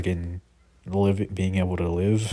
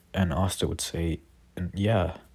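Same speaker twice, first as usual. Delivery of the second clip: usual speaking voice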